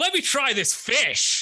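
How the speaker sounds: mock top-of-the-lungs shout, very high, drawn-out. Retelling how a companion shouted while the room listened to music: imitating a top-of-lungs shout. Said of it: "at the top of his lungs shouts".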